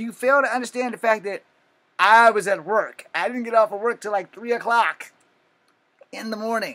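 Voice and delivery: high, loud, exasperated lecturing tone.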